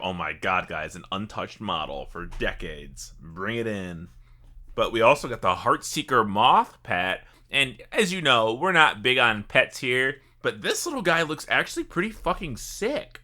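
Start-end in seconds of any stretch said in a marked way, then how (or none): 0.0-4.1 low, soft, slow mock drawling voice. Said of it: "It's like they forgot about it and like".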